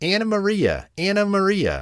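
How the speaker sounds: very high, tiny, squeaky rat voice. Reading a story aloud, voicing the rat calling out, in a squeaky rat voice. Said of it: "squeaked the rat".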